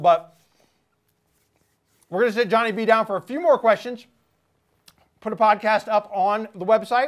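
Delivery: talking with mouth full of food. Podcast host, still eating, wrapping up the segment while talking with mouth full. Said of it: "I hate to get out of this with my mouth full".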